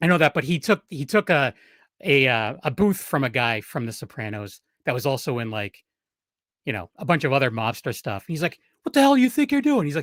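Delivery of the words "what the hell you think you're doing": very high, loud yell. Retelling a celebrity telling off another guest: imitating someone yelling. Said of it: "yelling at him before the show started".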